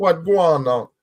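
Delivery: attempted Jamaican accent. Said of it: "I can't even do it".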